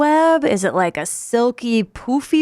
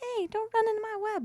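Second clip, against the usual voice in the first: tiny, very high, soft, scolding spider voice; 12 semitones higher, 14 dB quieter than usual. Picturing a spider complaining about someone walking into its web: imitating a spider scolding. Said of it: "I always picture the spider being like".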